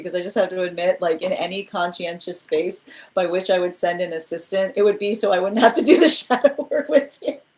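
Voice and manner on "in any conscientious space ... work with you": talking through hard laughter, higher. Reacting to a comment during card readings, laughing hard while talking. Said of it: "I'm sorry I'm laughing so hard".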